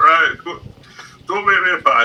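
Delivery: big, loud, belted Northern English man's voice. Acting out a big Northern driver after a road collision: Wallace from Wallace and Gromit voice. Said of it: "a guy that sounds like Wallace from Wallace and Gromit".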